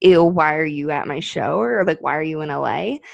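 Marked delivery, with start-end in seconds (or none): 0.0-1.6 put-on disdainful, grossed-out tone. Retelling how a man at a show questioned them, imitating a disdainful tone. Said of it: "But the way he said it was almost like".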